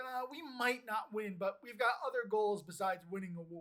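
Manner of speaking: normal talking voice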